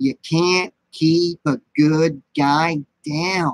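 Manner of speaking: creepy killer doll voice. Doing it for the niece who asked, the speaker performs a Chucky voice. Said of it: "So I got to do the voice first".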